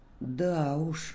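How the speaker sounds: embarrassed. A dog responds to another dog boasting about his odd name, embarrassed. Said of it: "смущенно проговорил Бобик".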